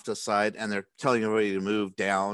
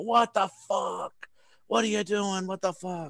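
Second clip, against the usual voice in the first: mock very high, shrieking crowd screams; 11 semitones higher than usual. Retelling how everybody reacted to a point-blank shot, acted-out screaming. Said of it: "everybody starts screaming".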